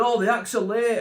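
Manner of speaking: flustered, panicky, fretting delivery. Retelling how the show's organizer reacted when acts were late: imitating someone panicking. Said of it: "he's panicking".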